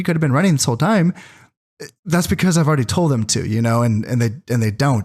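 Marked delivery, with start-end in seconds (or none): 0.0-1.1 sardonic, sarcastic aside. Retelling what is said to units in the game: imitating own sarcastic remark. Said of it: "sarcastically will tell my units".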